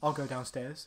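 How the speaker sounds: put-on British accent. Retelling a scene with a friend, voicing the woman's line in a British accent. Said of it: "doing it in a British accent".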